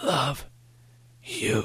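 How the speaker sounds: weak, high, hoarse rasp. Narrator reads the coach's line as they say goodbye, rasping. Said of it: "he rasped".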